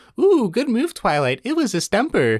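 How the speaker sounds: high, snarky voice, gloating. Complaining about her, mimicking her in a mock-snarky imitation. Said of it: "Her snarky voice".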